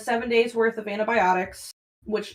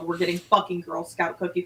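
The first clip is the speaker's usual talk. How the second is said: play-acted most serious tone possible, dropped; 5 semitones lower, 4 dB quieter than usual. Retelling own words in the truck: imitating own most serious tone. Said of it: "most serious tone".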